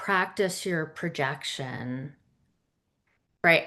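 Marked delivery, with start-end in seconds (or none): 0.0-2.1 low, soft, hunched-over, slouching delivery. Speaker showing how not to sound like the authority: hunched-over talking. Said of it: "hunched over in my chair and I was just kind of talking like this".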